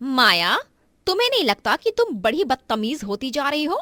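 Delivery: furious, loud, angry yelling. [name] scolds her sister-in-law Maya for eating on the bed: shouting angrily. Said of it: "आप अचानक मुझ पर इस तरह क्यों चिल्ला रही हैं?".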